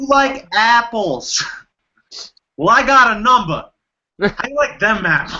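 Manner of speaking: put-on genuine-sounding East Coast accent. Asked for an impression, the speaker does an East Coast accent. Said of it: "Now that is genuine East Coast".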